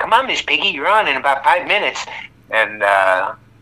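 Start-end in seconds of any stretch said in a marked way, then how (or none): 0.0-2.1 pitched-up, stage-manager-style call. Recalling the character as a stage manager calling a cue: Scooter voice. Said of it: "he was playing the stage manager going".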